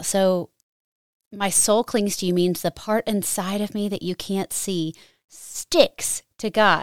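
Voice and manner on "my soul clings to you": ordinary talk, nothing marked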